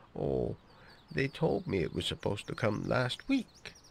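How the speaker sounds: utterly unbothered, easygoing, far too laid-back, swooping voice. In a machinima, John questions Di about the fencing: Di, far too laid back. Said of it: "It's just too laid back. It's just far too laid back. / He's got a sheep in".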